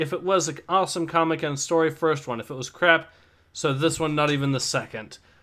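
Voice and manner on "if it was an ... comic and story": plain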